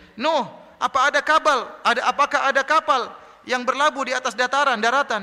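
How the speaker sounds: high, mocking jeer.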